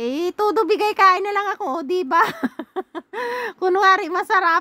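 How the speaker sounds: high, laughing through words.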